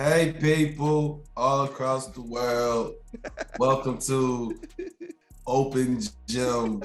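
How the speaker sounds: deliberately deepened, sick-sounding, slow put-on voice. Asked to say what's up to the people, a co-host greets them in a put-on deeper voice. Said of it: "with Sick [name] with the deeper voice".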